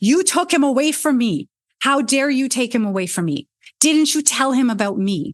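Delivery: enraged, furious, accusing tone. Retelling a woman confronting the chariot driver, acting out furious rage. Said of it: "her eyes are described as red with rage".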